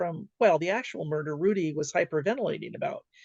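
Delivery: plain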